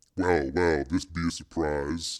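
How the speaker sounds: remarkably deep, low voice. Narrator reading Ice greeting Higgins, in a very deep voice. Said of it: "he said in a remarkably deep voice".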